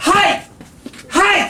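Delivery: high, loud, put-on shout of "hey". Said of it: "do an impersonation".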